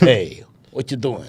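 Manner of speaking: Sicilian accent in gangster-movie style. Showing the others how he loves talking like a Sicilian: Sicilian accent. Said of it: "I love talking like a Sicilian".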